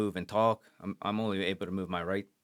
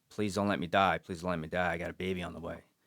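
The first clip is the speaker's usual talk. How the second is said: put-on desperate pleading tone; 3 semitones lower than usual. Retelling being shot, pleading with the medics: retelling pleading. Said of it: "So I start pleading with them".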